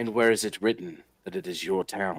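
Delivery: low, devastatingly intimidating, menacing delivery. Confronting a lawman in a tabletop game: devastatingly intimidating act. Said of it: "put on my most devastatingly intimidating, like, act".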